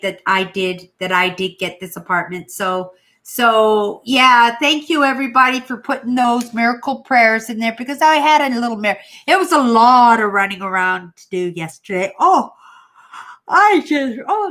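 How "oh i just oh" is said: very slow, high, drawn-out words spoken mid-yawn. Thanking everyone after a long, tiring day, the speaker starts yawning. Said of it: "look at me yawning".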